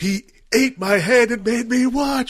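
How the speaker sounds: mock, very high, drawn-out horror shriek. Retelling a movie scene where a character screams: imitating someone screaming. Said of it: "she's, like, screaming".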